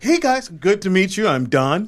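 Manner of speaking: light, non-threatening tone. Acting out meeting business people as himself: imitating own non-threatening greeting. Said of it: "I'm non-threatening".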